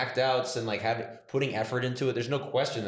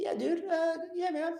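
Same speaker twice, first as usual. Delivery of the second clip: very high-pitched, casual bro-style voice. Doing an impression of Joe Rogan after saying his voice is high: Joe Rogan impression. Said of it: "He goes like".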